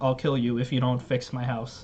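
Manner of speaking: ordinary talk, nothing marked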